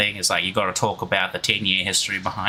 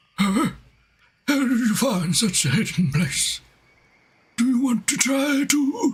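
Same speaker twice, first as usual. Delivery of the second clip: put-on very high-pitched elderly old man voice. Playing an old man questioning a newcomer to a hidden place, in an old man voice. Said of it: "I'm not going to do the old man voice anymore".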